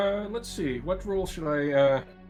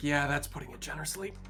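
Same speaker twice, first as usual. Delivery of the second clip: whispered, in a character voice; 4 dB quieter than usual. Commenting in character on a pilot's skill: in-character whisper. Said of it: "I sort of just whisper".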